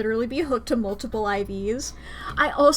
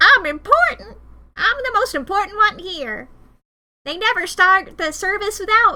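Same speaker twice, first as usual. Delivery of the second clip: high-pitched character voice; 8 semitones higher, 4 dB louder than usual. Imitating a self-important fire extinguisher character: imitating the fire extinguisher character. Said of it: "that fire extinguisher guy who's like".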